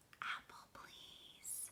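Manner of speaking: barely audible, soft, very quiet little whisper. Reading a story, Willow answers Missus Post at snack time: soft whisper. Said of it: "Willow whispered".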